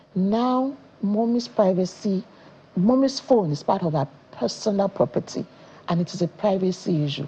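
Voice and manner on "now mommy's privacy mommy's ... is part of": ordinary delivery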